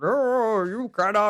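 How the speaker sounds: storybook wizard voice, pitched high. Remembering their dad reading them Lord of the Rings, doing his Gandalf voice. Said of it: "he had this great Gandalf voice".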